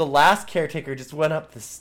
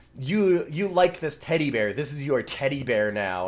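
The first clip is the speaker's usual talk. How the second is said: spiteful, mean-spirited, malicious, nasty gloating tone. Retelling how the headmistress hands over the teddy bear: imitating a malicious, horrible delivery. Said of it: "in this malicious, horrible way".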